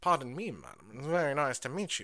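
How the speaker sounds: put-on gallant, flirtatious charm, swooping sing-song. Retelling how Wesley flirts with Cordelia, thinking she's a teacher: imitating Wesley flirting. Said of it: "he's all, like, flirty with her".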